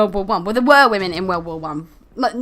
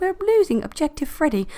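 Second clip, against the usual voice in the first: gentle, calm, soothing, pitched-up voice; 7 semitones higher, 4 dB quieter than usual. Contrasting how a warning can be voiced, the speaker does it imitating a calm, soothing voice. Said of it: "calm, soothing voice, and she's like".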